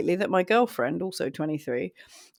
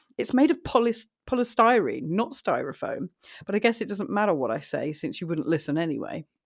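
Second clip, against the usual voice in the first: ordinary talk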